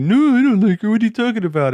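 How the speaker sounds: put-on very high little boy voice. Retelling how a shy little boy in the story denies liking a girl: imitating a little boy from Totoro. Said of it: "he's just like".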